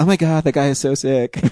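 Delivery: put-on girl's voice. In a mock exchange, voicing the girl's reply, imitating Rebecca. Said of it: "I can't talk like a girl".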